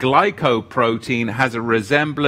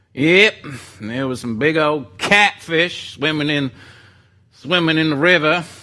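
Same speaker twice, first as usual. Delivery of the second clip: put-on Southern US accent; 3 semitones higher than usual. Reading scripture aloud after others urge it on: southern accent. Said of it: "just a little southern accent".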